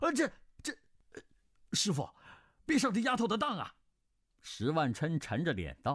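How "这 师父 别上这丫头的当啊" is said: very high, rapid, blurted cry. A disciple jumps up and calls to his master, crying out. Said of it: "慕容景月跳起身来叫道".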